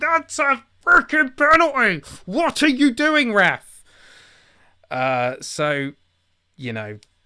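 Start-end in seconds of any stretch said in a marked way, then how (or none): 0.0-3.8 mock loud, shrill, high-pitched screaming. Retelling shouting at a football video game's referee: imitating screaming at the game. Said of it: "I'm literally screaming at it".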